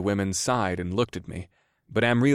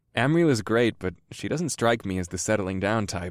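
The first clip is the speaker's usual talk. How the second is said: ordinary delivery, nothing marked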